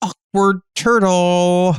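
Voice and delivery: slow, drawn-out deadpan. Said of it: "And I go like".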